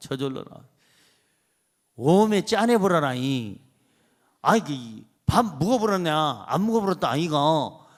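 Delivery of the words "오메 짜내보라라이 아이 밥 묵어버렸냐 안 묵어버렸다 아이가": put-on regional dialect, lower pitch. Explaining how you pick up dialects from people around you, doing put-on Jeolla dialect. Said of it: "전라도 사람하고".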